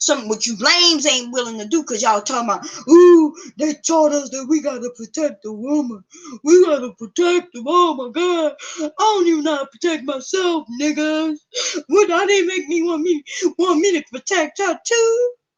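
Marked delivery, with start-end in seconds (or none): 2.9-15.3 blubbering, crying, sobbing voice. Mocking Tomorrow Man by imitating how he sounded: mock crying. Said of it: "You sounded like a crying ass fool".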